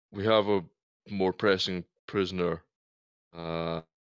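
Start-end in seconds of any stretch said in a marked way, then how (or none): none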